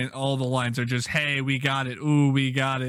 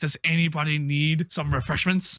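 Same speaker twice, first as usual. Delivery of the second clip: put-on, mock serious tone; 2 semitones higher than usual. Retelling a movie conductor's line about refreshments: imitating a serious delivery. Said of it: "he says it all serious".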